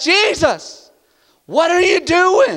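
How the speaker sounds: mock frightened, high, very slow, panicked voice. Retelling a storm scene, disciples waking a sleeper: imitating panicked disciples. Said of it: "they are panicking".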